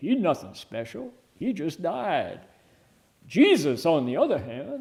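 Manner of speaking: put-on Southern accent. Retelling what a man said to everybody, in a put-on Southern accent. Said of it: "I'm giving him a Southern accent".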